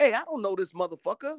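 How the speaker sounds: put-on high, small little kid voice. Imagining a six-year-old heard cursing at the mall, in a little kid's voice. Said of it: "What little 6-year-old voice said that shit?".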